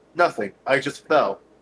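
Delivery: ordinary talk, nothing marked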